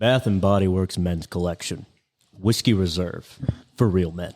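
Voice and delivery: TV commercial announcer voice. Doing a mock commercial for a whiskey-scented men's line, in a cologne commercial voice. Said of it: "let me do a cologne commercial".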